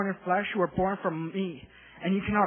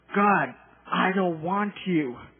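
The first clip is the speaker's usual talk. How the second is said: acted, mock-angry tone, growing angrier; 4 dB louder than usual. Retelling praying in a family room, acting out angry words. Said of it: "getting angrier and angrier".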